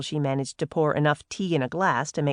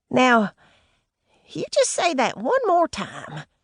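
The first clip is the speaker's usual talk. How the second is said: very high, tight, squeaky little voice; 9 semitones higher, 3 dB louder than usual. Reading a novel aloud, a character demands a repeat: squeaky commanding voice. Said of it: "she commanded in a squeaky voice".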